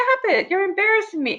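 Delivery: loud, high-pitched yelling. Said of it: "Amanda starts yelling at me".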